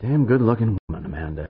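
ordinary delivery

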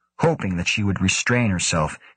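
ordinary delivery

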